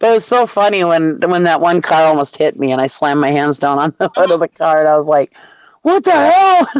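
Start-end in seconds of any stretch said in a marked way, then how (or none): 5.8-6.7 mock very high-pitched, furious, angry scream. Recalling a car that almost hit you, retelling a scream at the driver. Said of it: "I started screaming at him".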